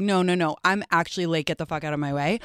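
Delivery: ordinary delivery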